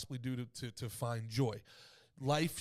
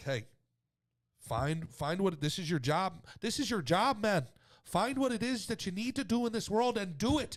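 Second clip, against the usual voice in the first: raised, pitched-up pushing voice with faint Irish tinge; 6 semitones higher, 5 dB louder than usual. Show another speaker what he would say about this, as a Jordan Peterson impression, a little Irish. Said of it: "Sounds a little Irish".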